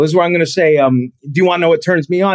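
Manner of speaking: usual speaking voice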